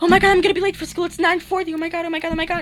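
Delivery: acted-out very high, loud, frantic panicked alarm. Retelling waking up and thinking they were late: imitating own past panic. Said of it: "in a panic".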